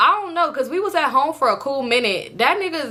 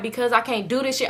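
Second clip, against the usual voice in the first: normal talking voice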